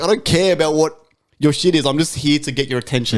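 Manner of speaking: plain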